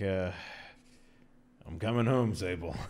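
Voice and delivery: muttered under the breath. Drawing Raven's Bane in the game and speaking, said under the breath. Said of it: "say under my breath".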